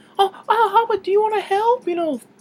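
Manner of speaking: very high, gentle American voice. Praising a british actor's american accent, imitating his soft american voice. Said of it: "that soft voice he has".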